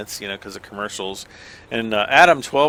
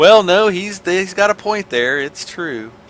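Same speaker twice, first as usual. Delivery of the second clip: pitched-up country farmer voice; 8 semitones higher, 4 dB louder than usual. Speaker acts out how farmers would react to his remark, imitating farmers. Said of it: "All the farmers are like".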